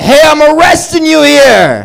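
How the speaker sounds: put-on New York cop accent, very high, swooping. Doing a series of New Yorker bits, now as a New York cop, New York accent. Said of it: "This is a cop from New York".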